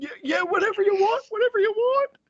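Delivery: very high, scared, frightened pleading with rising pitch. Voicing a character the party intimidates as bad cops, scared. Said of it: "He's scared".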